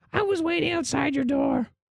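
very high, tiny little goblin creature voice. Voicing a small jungle goblin answering a call at the door: small jungle goblin voice. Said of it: "you see the small jungle goblin standing in front".

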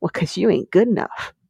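mock sassy delivery. Retelling a rabbit character's comeback to a rival: imitating Haru's sassy reply. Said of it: "she's sassy".

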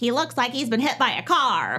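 menacing, witch-like voice, swooping in pitch. Recounting how Karen delivered a line in a clip, doing a witchy impression of Karen. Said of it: "she said it like really witchy".

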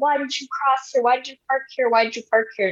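high-pitched mild yell in a woman's voice. Telling about a hired car, the speaker acts out a lady yelling at the driver: imitating a lady yelling. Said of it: "this lady starts yelling".

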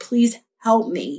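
put-on raspy voice. Retelling what a bleeding woman said: imitating a raspy voice. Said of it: "raspy and shit".

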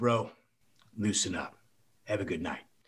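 low, husky voice. Retelling what Rodman said in a bar: husky Rodman voice. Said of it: "that husky kind of voice thing he had".

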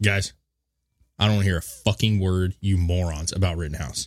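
usual speaking voice

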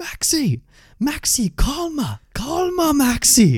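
very high, very slow, drawn-out swooping yell. Retelling a coach charging off the bench at a striker: imitating Thierry Henry yelling. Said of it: "he's yelling at me for missing a chance".

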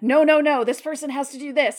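insistent, loud, high-pitched yelling. Retelling a man at the park yelling at someone on his phone: imitating a man yelling on the phone. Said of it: "yelling at someone and saying".

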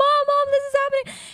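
very high, shrill scream. Speaker retelling an accident with an electric mixer, re-enacting screaming for mom. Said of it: "I start screaming for my mom".

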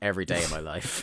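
muttered under breath. Retelling a story, acting out another man's reply: retelling a mutter under breath. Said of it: "And under his breath".

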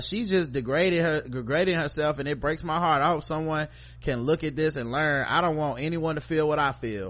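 ordinary talk

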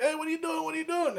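very high, frantic, rattled-off panic. Retelling a movie scene, imitating Jose panicking. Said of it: "He's panicking".

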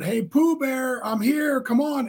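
high, hollered calling yell. Retelling how grandma called him on the playground: imitating grandma yelling. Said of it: "she yelled".

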